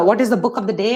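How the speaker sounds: plain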